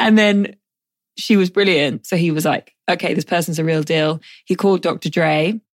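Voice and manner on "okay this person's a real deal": plain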